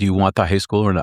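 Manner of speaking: stern tone, put on. Retelling what the county mayor said after looking sternly: imitating a stern question. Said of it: "looked at me very sternly and he said".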